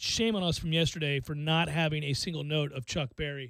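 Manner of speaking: ordinary talk, nothing marked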